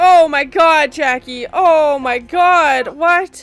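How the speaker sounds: very loud, very slow, high yelling. Reacting to a scene while watching, yelling at the screen. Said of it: "I don't know why I'm yelling at Jackie".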